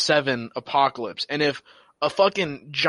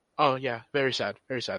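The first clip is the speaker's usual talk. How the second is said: put-on dismissive, deflecting tone, quieter; 2 semitones lower, 7 dB quieter than usual. Retelling Loki's reply to Mobius: imitating Loki deflecting. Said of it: "deflect it and just, and ignore the reality".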